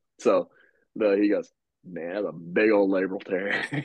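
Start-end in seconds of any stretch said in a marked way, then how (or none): 1.9-3.7 put-on drawn-out southern accent. Retelling what a man said about a labral tear, southern drawl. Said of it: "he had a kind of a southern drawl".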